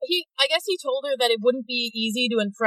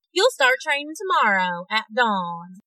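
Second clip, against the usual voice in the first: put-on country accent. Speaker quoting what a character said: country accent. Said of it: "she gave her a country accent".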